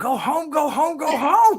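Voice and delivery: very high, dragged-out scream. Retelling a moment from back in the day: imitating someone screaming. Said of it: "where you're just screaming at him".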